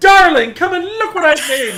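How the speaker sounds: mock joyful, very high, very loud excited shout. Retelling calling a partner over after exploding out of a chair: retelling own excited outburst. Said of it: "explode out of my chair and I'd be like".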